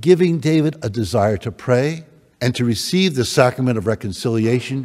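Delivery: ordinary delivery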